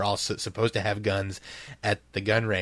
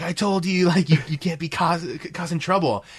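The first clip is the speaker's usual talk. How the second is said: put-on angry yell, much higher; 8 semitones higher than usual. Recounting a scene, the speaker voices the shop owner busting in, retelling an angry yell. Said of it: "very angrily, like, yells".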